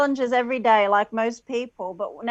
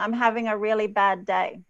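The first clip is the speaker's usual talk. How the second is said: ordinary delivery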